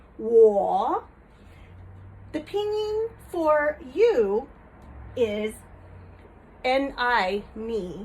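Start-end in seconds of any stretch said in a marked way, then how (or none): 0.2-1.1 third tone on "wo", dipping low, then rising. Teaching the mandarin pinyin for i: third tone on 我. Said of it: "that is third tone, so it dips down and comes back up".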